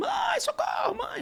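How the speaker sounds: put-on play-acted very high, shouting little kid scream. Retelling how the younger grandson screamed for his mother: imitating a small child screaming for help. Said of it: "E o pequeno gritando".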